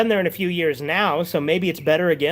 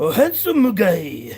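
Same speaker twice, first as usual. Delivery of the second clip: put-on Japanese accent. Retelling how he always says his nickname: japanese accent. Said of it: "He always says it in a Japanese accent".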